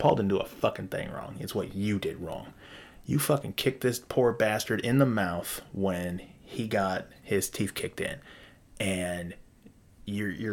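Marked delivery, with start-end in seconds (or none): none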